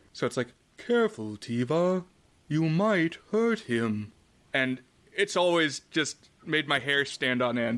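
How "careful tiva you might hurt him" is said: slow, eerie, creepy alien voice. Describing a movie's alien characters, quoting one line in a monotone alien voice. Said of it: "the way that the alien characters talk is like very monotone".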